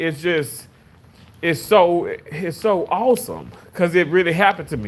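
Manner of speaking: emotional, choked up, fighting off tears. Telling how a dream of a late mother came true, holding back tears. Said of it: "I'm not gonna cry".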